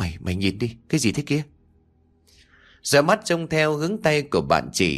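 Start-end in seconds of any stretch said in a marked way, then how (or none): 0.0-1.4 shaky, quavering, trembling voice full of fear. On the rooftop, one friend points down to the garden and asks: trembling voice. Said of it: "giọng run rẩy".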